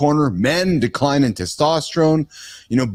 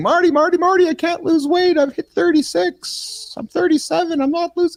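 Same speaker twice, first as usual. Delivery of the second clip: very high-pitched woman's voice. Speaker to Marty, mimicking his female clients: imitating a female fitness client. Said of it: "they talk just like that".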